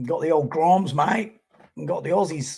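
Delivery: terrible put-on Australian accent. Commentating a surf contest, the speaker tries a bad australian accent. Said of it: "I'm terrible at Aussie accents".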